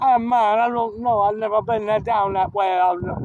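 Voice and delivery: put-on Rasta-style Jamaican accent. Speaker acts out a stranger's reply about a street sign, mock Jamaican accent. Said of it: "That's that's my Jamaican fucking Italian accent".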